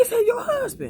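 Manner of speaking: squeaky, very high-pitched voice. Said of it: "he sounded so high pitched".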